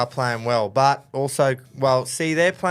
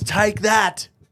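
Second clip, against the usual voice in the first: high-pitched, mock triumphant taunting tone. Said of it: "and he says".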